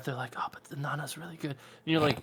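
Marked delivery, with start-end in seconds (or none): 0.4-1.5 very quiet, hushed, barely audible under-the-breath mutter. Imitating people who mention a show quietly: muttering under their breath. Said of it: "talk about under, like, like, under their breath".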